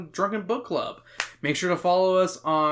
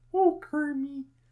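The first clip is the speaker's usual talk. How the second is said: put-on pig puppet voice, higher; 11 semitones higher than usual. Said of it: "I do a better Miss Piggy".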